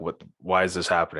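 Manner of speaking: usual speaking voice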